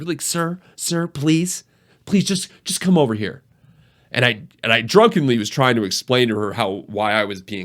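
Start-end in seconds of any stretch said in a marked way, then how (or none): 0.2-3.4 play-acted polite, cautious, coaxing, pitched-up tone. Retelling how a cautious hostess asked him to come away: imitating a cautious, polite request. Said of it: "she asked very nicely".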